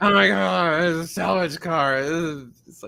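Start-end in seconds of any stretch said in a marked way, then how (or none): 0.0-2.0 mock, up-in-arms, outraged outcry. Retelling how buyers reacted to a salvage-title car: imitating outraged buyers. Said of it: "people up in arms that were outraged".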